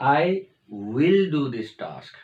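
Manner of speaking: "will" given light, slight stress. Explaining how will expresses determination, with stress on will. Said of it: "विल पे stress देना है थोड़ा सा".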